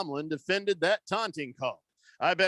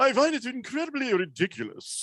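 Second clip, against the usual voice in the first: grandly self-important pompous voice, pitched up; 7 semitones higher than usual. Reading out a listener's text on air, in a mock-pompous voice. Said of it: "why did my text get the pompous voice?".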